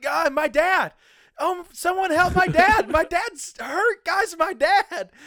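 shrill, very high screaming, drawn out. Retelling calling for help when a subwoofer pinned their dad, reenacting screaming. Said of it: "So I just started screaming".

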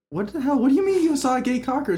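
high, shocked, freaked-out voice. Speaker tells a joke, playing the mom reacting to her son, imitating a mom freaking out. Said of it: "The mom just freaks out like".

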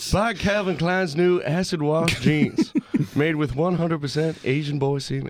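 fake ad announcer, commercial pitchman delivery. Doing a joke ad for jeans: mock commercial voice. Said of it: "I like that voice".

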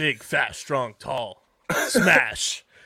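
big, brutish monster voice. Describing what Redwoods players are like, in a Hulk voice. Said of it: "Why did I hear you say that in a Hulk voice?".

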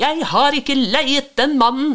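very high, shrill, frightened outcry. The priest sees a stranger bailing out the boat and cries out, shouted. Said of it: "Presten ble likbleik og ropte".

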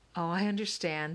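plain reading voice

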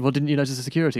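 usual speaking voice

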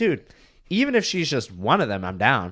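normal talking voice

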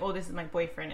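ordinary delivery

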